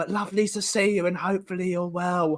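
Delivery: whispering dramatically. Greeting viewers while still whispering for dramatic effect: whispering for dramatic effect. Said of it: "We're still whispering for dramatic effect".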